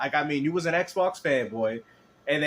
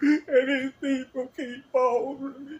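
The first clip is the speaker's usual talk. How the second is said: mock desperate voice with higher pitch; 11 semitones higher than usual. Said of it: "you can hear the desperation in this man's tone".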